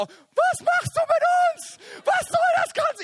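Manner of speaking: very high, slow, panicked shrieking woman's voice.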